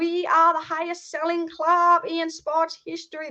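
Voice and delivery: slow, shoddy, bragging put-on American accent, dragged out. Imagining the Glazers bragging to American friends, in a bad American accent. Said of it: "That was the shittest American accent".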